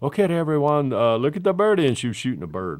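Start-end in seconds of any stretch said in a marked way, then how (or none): 0.0-1.9 heavy put-on Colombian accent, very loud. Retelling a woman taking a group picture after the show, imitating her heavy Colombian accent. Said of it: "that deep Colombian accent she's".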